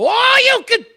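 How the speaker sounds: big, shrieking, very high, very loud yell. Retelling what a fighter yelled before a punch: imitating a fighter's big yell. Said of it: "he yelled out a big".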